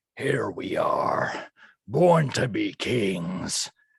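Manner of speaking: put-on piratey guy voice. Voicing Echo firing bolts: piratey guy voice. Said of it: "in a voice of a kind of a piratey guy".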